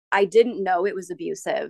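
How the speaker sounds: normal talking voice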